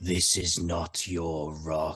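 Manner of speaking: hushed whisper. Casting Dissonant Whispers at a blight, speaking the words: whispering. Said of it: "I am going to whisper the words".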